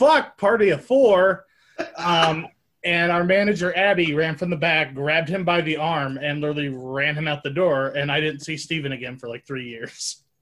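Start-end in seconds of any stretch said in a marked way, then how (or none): 0.0-1.5 high, loud, drawn-out, all-out scream. Retelling a coworker yelling over the PA: imitating Steven screaming. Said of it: "He just screamed".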